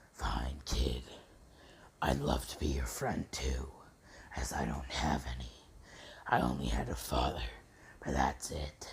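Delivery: subdued, hushed, soft fox-demon creature voice. Retelling a Naruto story, the fox answering Naruto, in Kurama voice. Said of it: "doing the Kurama voice".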